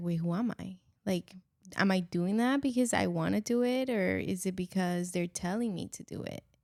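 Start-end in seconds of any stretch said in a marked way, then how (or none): none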